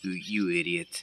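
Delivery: put-on muttering under breath. Retelling what the other man muttered: imitating mumbling under breath. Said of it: "I can hear him under his breath mumble".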